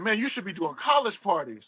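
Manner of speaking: ordinary talk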